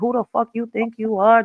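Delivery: mock acting hard, tough and confrontational, squaring up. Retelling bumping heads with a man, imitating own past tough talk. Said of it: "I'm being all tough and shit".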